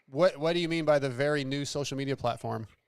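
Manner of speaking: ordinary talk, nothing marked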